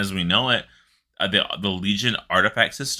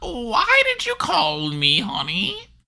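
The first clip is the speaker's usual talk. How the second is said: very high, slow, drawn-out demon grandma voice. Imagining a grandma version of a demon: grandma Voidwalker voice. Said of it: "a grandma Voidwalker".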